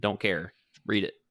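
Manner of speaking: ordinary talk, nothing marked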